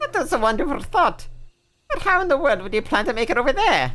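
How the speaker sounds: put-on slipping Welsh accent. Voicing a character answering a suggestion in a story scene: slipping Welsh accent. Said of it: "My my Welsh accent is just slipping".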